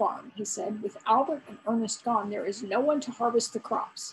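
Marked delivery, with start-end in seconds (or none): none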